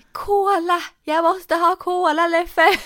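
very high, drawn-out, stretched-out yell. Retelling what they screamed when they needed cola, retelling a shout. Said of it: "Jag bara skrek".

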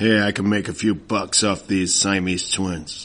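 brash, loud, put-on American accent. Telling a story, quoting an American who found the twins, in an American accent. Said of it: "Can you do that?".

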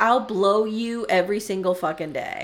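normal talking voice

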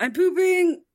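very high voice, muffled as behind a door. Narrator voicing a character answering from behind a door after a knock, muffled reply. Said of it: "You do hear a muffled response of".

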